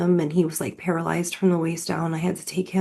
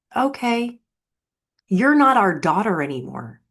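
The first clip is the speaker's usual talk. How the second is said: acted loud, full-throated yell at top volume; 2 semitones higher, 5 dB louder than usual. Retelling what a father yelled on the front porch: imitating a father yelling. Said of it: "yelled at the top of his lungs".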